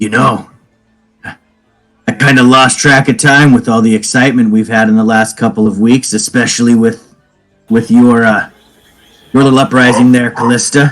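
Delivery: put-on whisper. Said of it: "And I say that with a whisper".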